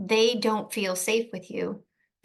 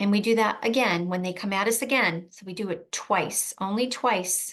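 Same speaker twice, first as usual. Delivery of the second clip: ordinary talk, nothing marked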